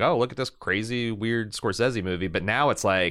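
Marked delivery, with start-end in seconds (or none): none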